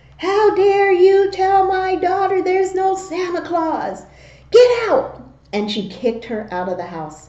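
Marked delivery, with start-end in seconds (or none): 0.2-5.2 play-acted, very high, shrill, livid, furious yell. Retelling how the speaker's mom threw a lady out; imitating mom's furious yell. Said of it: "She was yelling at that lady".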